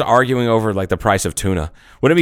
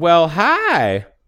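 put-on Southern lady voice; 6 semitones higher than usual. Speaker describes a sound they heard at night, imitating a southern lady voice. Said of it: "It sounds like a southern lady going".

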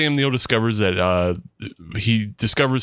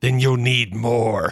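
forced out through gritted teeth. Retelling a movie scene, acting out the slapped woman's reply through gritted teeth. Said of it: "through gritted teeth and spitting out blood".

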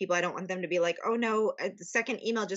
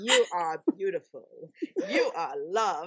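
put-on Australian accent. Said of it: "in his Australian accent".

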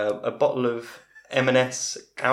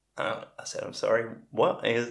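ordinary delivery

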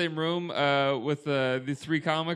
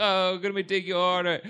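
ordinary talk, nothing marked

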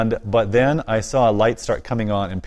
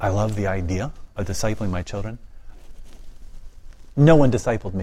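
mock-quiet hushed speech. Retelling what an educated person confided to him, imitating quiet speech. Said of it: "said very quietly".

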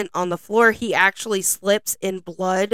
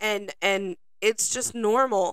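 ordinary delivery

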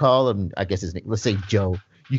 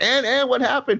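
very high-pitched yelling; 11 semitones higher than usual. Retelling a phone call, quoting the father: imitating a father yelling. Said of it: "The father's just yelling".

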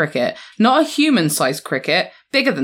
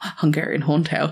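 muttered under one's breath; 2 semitones lower, 5 dB quieter than usual. Answering the asker's quiz question to oneself, muttered under breath. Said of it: "under my breath".

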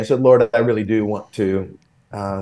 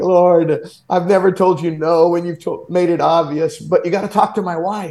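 higher-pitched, tearful crying voice; 7 semitones higher than usual. Retelling a prayer while driving home from seminary: retelling own crying prayer. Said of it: "And I'm crying and like".

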